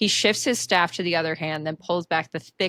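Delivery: ordinary delivery, nothing marked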